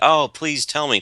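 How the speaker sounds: high, whiny, needy, passive-aggressive begging. Retelling how one person wants others to beg him: imitating someone begging. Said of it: "wants you to beg him to".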